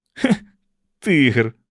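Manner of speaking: loud, openly disgusted exclamation. Narrator reads a character dismissing another's claim, said with disgust. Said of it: "з огидою сказав Кенні".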